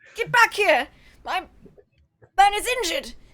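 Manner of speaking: high, yelled character voice. Playing a character who yells after a fleeing figure: in-character shout after a fleeing culprit. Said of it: "act like maybe Lamont was the crazy one".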